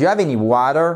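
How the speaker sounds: rising pitch on water. English lesson on yes-no questions: rising pitch on final water. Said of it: "on remonte parce que c'est une yes, no question".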